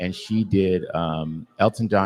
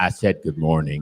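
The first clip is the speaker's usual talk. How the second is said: lowered, deeper voice; 2 semitones lower than usual. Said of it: "I heard you lower that voice".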